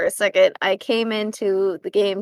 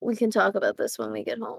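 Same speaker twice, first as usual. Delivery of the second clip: hushed whisper, quieter; 9 dB quieter than usual. Playing Nitro in a tabletop game, leaning in close to Ari, whispering. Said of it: "kind of whisper like".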